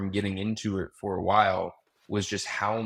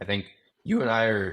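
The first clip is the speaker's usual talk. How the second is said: voice suddenly cracking mid-phrase. Talking with the other person in conversation, voice cracking. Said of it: "I just had a terrible voice crack there".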